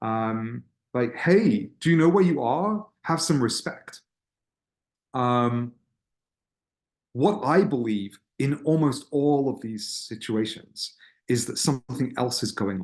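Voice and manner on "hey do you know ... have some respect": fast, pitched-up, frustrated, angry scolding tone. Describing adults confronting distracted teens, imitating them with mock-angry scolding. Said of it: "in sort of like a pretty angry tone".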